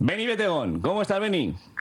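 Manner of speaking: enthusiastic, high, excited on-air host voice.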